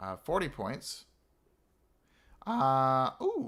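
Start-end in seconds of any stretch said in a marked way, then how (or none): 2.5-3.5 voice cracking in the middle of ooh. Counting up points aloud while planning, with a voice crack. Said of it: "that was a voice crack".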